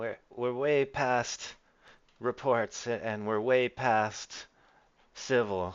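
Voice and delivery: trembling, jittery, nervous, slow, halting voice. Voicing Francesca, who holds a gun and answers a player: nervous, trembling character. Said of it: "she snaps back to nervousness".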